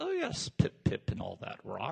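soft, posh, put-on British gentleman voice. Riffing on a character's reply, voicing it as a proper British gentleman. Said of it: "Sounds like the proper British gentleman".

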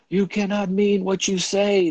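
shrill, very high, loud shriek. The other one answers the man unwinding the rope, shrieking. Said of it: "the other shrieked".

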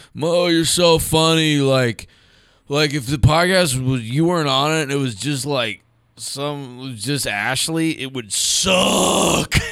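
put-on play-acted boozy, drunken voice. Podcast host quoting a caller who phoned in, imitating a drunk caller. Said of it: "He sounds drunk".

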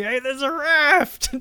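shrill, very high yell, stretching out raft. Recalling a yell from a film, the speaker acts it out: retelling a scream. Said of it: "he's just screaming".

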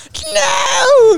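put-on shouting girl voice. Acting out a scene from the show: Arya imitation. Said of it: "It's my Arya imitation".

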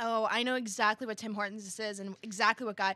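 plain

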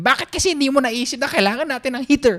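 play-acted very high, shrill scolding scream. Acting out how Bonizi would scream at them: imitating Bonizi screaming. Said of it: "Bonizi screams at me".

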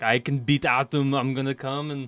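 put-on slow, deliberate Austrian accent. Imagining a listener boasting about beating Adam, Arnold impression.

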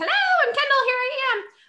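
very high, loud, vibrant voice. Describing a friend by imitating her: imitating someone loud and vibrant. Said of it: "loud and vibrant".

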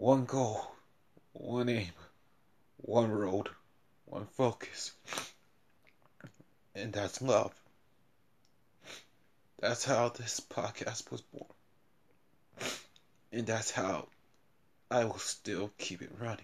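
speaking through tears. Podcast host asking listeners to share the show, crying while talking. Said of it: "Even if it sounds like I'm crying, and I am right now".

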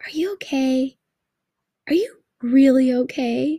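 put-on anxious, concerned, worried tone. Imitating people who keep asking the speaker if they're okay, mimicking people's concerned tone. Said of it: "in that one kind of voice where it's like".

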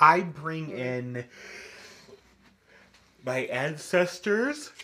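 talking through a yawn. In a coven discussion about spell work, answering the group, yawning while speaking. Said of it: "Sorry, I'm yawning".

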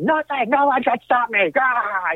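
mock shrill, very high, drawn-out screaming announcer voice. Retelling a promo where someone yelled at Charlie: imitating Nia screaming. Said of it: "and screaming".

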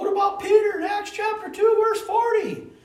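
very high put-on voice. Quoting a question a man asked, in a high put-on voice. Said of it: "I don't know why I did a high voice on that one".

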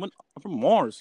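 loud put-on accent, not American. Mimicking another speaker's accent change: imitating another speaker's accent. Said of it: "You just went from American to".

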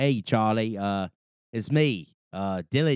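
failed put-on Australian accent. Greeting Charlie while attempting a bad Australian accent. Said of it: "I can't do an Australian accent right now".

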